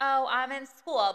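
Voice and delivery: put-on, overly courteous, sweet, slow, super polite tone. Retelling a reply to customers asking about a real job: imitating a super polite answer. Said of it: "try and answer super politely".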